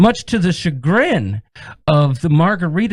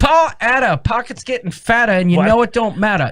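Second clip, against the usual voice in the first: fake, higher-pitched Southern accent in rooster voice; 5 semitones higher than usual. Reading out names of people who joined: put-on southern voice. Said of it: "Why does your voice go into, like, a, "Hey, I'm a Southern something"".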